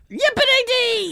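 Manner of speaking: very high, loud, silly cartoon character voice. On a podcast, teasing the co-host about how he talks, in a cartoon character voice. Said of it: "Why do you talk like a cartoon character".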